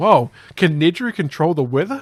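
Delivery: loud, high, awed gasp of mock wonder.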